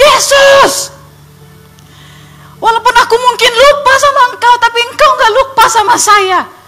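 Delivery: high, loud scream. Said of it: "Saya langsung teriak".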